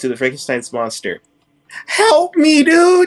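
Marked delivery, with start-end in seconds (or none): 1.9-3.1 very high, very loud holler. A player's character calls out to Frankenstein's monster mid-game, calling out for help. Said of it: "Now I call out to the monster".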